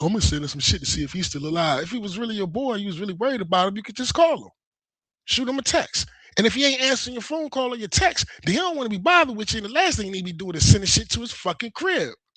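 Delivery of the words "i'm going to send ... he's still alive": usual speaking voice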